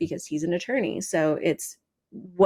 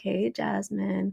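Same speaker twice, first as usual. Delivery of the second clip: soft, hushed stage whisper, close and intimate; 2 semitones higher, 5 dB quieter than usual. Retelling how he comes up and greets the speaker: imitating a half-whisper. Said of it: "he'll whisper in my ear".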